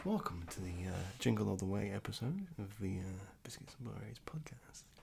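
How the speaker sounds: soft, low ASMR whisper. Podcast host welcoming listeners to the episode, in a soft asmr whisper. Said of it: "Why are you talking like that?".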